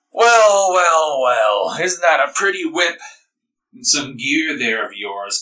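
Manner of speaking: put-on boozy, slow, drunken drawl. Narrating a tabletop scene, the speaker voices a drunk stranger approaching you, drunk character voice. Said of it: "they look over at you drunkenly".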